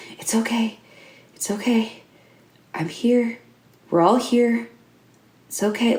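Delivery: smooth, soothing, calm, light half-whisper. Narrating the game, the storyteller voices a girl calming another character in a half-whisper. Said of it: "she just starts to whisper".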